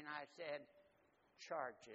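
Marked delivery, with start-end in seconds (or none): 1.5-2.0 acted voice quavering and trembling with fright. Retelling asking the storekeeper to charge it: retelling a quivering voice. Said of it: "with a quiver in my voice and with my knees shaking".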